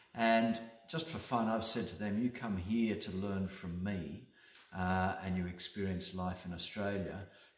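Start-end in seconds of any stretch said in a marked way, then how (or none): none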